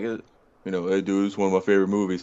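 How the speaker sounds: dumb, tall big-guy voice. Retelling what a friend said about a favorite movie, imitating a friend, Brawler. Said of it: "Good impression, by the way".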